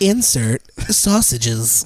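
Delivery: jokey put-on British accent. Asked by the others to do a British voice: put-on British accent. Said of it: "To bring British voice out".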